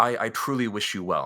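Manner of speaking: mock utterly earnest, heartfelt, halting sincerity. Retelling what she said as the speaker left the bus, most sincere voice. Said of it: "in the most sincere like voice I've ever heard".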